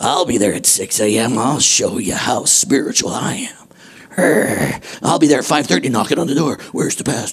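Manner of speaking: low, hushed, mock eager voice.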